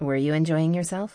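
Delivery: ordinary delivery, nothing marked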